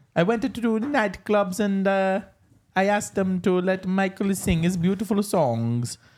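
bad put-on Italian accent. Playing a ghostly grandfather answering the others; bad italian accent. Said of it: "That was an Italian accent".

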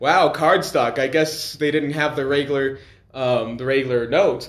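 plain

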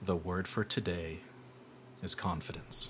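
melodic, warm whispering. Acting out a scene where he speaks right at your ear: warm, musical whisper. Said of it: "with a warm, musical tone, he whispers".

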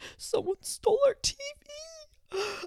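play-acted very high, very drawn-out sobbing speech. Retelling what the speaker's mom said after the car was gone; imitating mom crying. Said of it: "And she was like crying".

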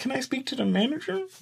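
very high, soft woman's voice.

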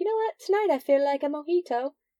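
put-on British accent. Describing ordering a drink from your cruise waiter, put-on English accent. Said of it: "Did you go on an English cruise?".

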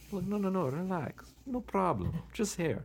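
put-on slow, high South American accent. Retelling what the barber said about an uneven beard line: south american accent. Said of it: "this South American accent".

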